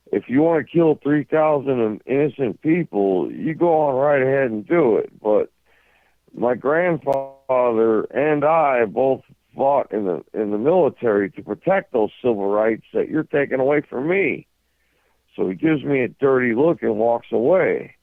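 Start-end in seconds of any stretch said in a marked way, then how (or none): 0.1-14.4 sarcastic, retorting tone. Retelling a past reply to a man at the Capitol: sarcastic remark. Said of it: "I sarcastically told the guy".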